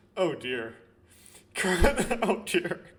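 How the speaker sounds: loud, laughing through the words. A player reacts to something in the game that made them laugh, laughing while talking. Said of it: "I better stop laughing".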